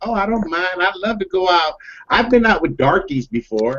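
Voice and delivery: put-on beautiful, high, friendly, easygoing Southern accent. Retelling what a young woman said when invited out for drinks: southern accent. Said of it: "Beautiful Southern accent".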